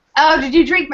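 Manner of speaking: play-acted bratty, snotty little-sister voice. Retelling a scene where a little sister taunts her older sister: imitating a snotty sister. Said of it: "she's just snotty".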